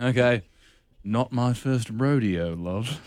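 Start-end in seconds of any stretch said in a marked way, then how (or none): 1.0-2.9 put-on drifting British-to-western accent, lower, quieter. Delivering a witty line to impress a Bond girl: British accent slipping into Western. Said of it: "You went from like British to Western".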